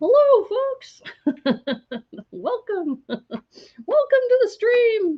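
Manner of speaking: very high, squeaky, slow, swooping voice. Welcoming viewers to the stream, in a terrible Mickey Mouse impersonation. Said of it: "That's a terrible Mickey impersonation".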